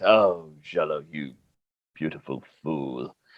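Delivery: very low, quiet mutter under the breath. After greeting Pompous Cloud, Remy speaks to Jello, muttering under breath. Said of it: "Remy says under his breath".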